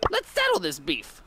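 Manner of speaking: put-on New Jersey accent voice. In a game update showcase of new voice lines, Crow speaks in a Jersey accent. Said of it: "he's got that Jersey accent".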